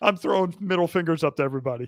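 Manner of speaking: ordinary delivery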